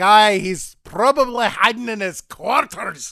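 put-on Scottish accent with burr. Retelling a scene, the speaker gives the engineer's reply in a Scottish accent. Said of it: "the Scottish accent".

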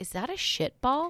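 high, half-whispered stage whisper aside. Reading a story aloud, a coworker on the stairs asks quietly: half-whispering. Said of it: "he whispers".

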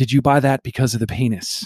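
mock-deadpan delivery. Retelling what mom asked on the drive home, imitating her deadpan. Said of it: "my mom deadpans".

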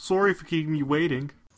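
mock Canadian accent. Retelling what a very canadian dentist said: imitating a canadian dentist. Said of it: "he was very, very Canadian".

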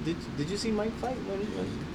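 quiet, fading tone.

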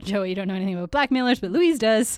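ordinary delivery

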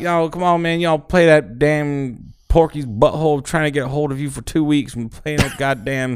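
put-on rambling voice. Retelling a voicemail a caller left complaining about a show: Boomhauer voice. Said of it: "that's where he adopted the voice from".

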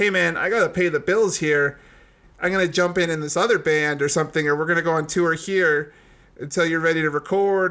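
normal talking voice

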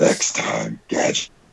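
rough, creaky, raspy cartoon villain voice. Quoting the cartoon villain after the voice comparison: Doctor Claw voice. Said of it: "Doctor Claw from Inspector Gadget's face".

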